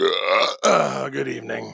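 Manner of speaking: words spoken through a burp. Greeting the panel at the start of the show, burping the words. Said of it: "I can almost smell that one".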